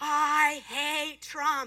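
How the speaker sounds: evil, demonic, demon-like voice. Speaker retells a voice that spoke behind them at church, in a demonic voice. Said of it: "This demonic voice came behind and said".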